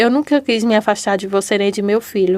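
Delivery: normal talking voice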